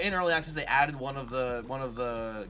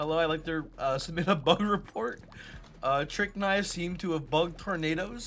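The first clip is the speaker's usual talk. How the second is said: high voice, giggling through words; 5 semitones higher than usual. Finding a bug while playing a game, speak laughing while talking. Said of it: "sorry, I'm, I'm laughing".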